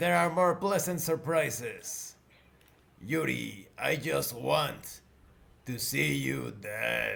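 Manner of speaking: distorted, garbled voice. Voicing a mystery caller through a robot: distorted voice. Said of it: "Distorted voice".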